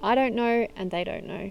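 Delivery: ordinary delivery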